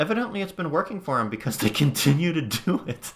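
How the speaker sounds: high, loud, swooping sarcasm laid on thick. Mocking a company's strategy of not selling its product, said super sarcastic. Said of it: "I'm being super sarcastic here".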